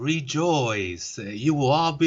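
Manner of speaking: creepy, very slow voice, every word drawn out. Quoting a movie villain's line to a friend: creepy Ebony Maw voice. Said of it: "he had a creepy ass voice".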